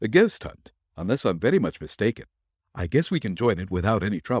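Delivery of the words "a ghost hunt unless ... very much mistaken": usual speaking voice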